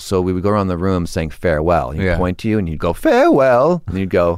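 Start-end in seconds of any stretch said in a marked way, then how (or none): 2.9-3.8 very high, forced, faked cracking voice. Describing an acting class exercise of saying farewell, with a fake voice crack. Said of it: "if you crack your voice".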